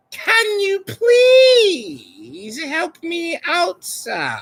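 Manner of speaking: very high, slow, swooping sing-song put-on voice. Mocking how Jen sounds, asking for answers: imitating Jen's voice. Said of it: "That's how you sound".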